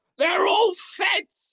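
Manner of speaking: put-on wild yell, pitched way up. Imagining a father on camera: imitating someone screaming. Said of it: "watching him scream into a camera".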